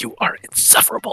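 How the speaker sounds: muttering under the breath. Voicing a character escorting someone out: muttering under breath. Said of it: "she kinda mutters under her breath to Wyatt".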